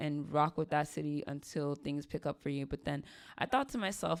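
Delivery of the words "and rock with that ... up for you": usual speaking voice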